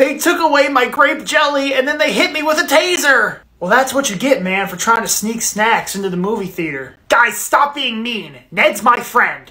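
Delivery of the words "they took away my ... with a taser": crying, words coming through sobs. A friend caught sneaking snacks into the movie theater explains, crying. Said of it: "I can't stop crying".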